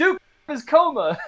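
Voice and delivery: mock, shrill, very high, loud yell. Recounting a movie ending where someone off screen yells: retelling an offscreen yell. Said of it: "someone off screen again yells".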